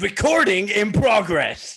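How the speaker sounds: very loud, high put-on American accent. Quoting what the recording message said, in an American accent. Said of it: "your American accent".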